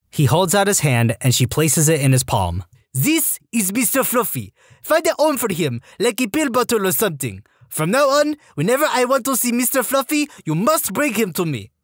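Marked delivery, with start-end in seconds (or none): 2.9-11.6 put-on high French-Canadian drill sergeant accent. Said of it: "female French-Canadian sergeant with this accent".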